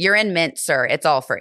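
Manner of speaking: put-on sassy voice. Retelling a flight attendant's reply to a passenger: imitating a sassy flight attendant. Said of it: "he was so sassy about it".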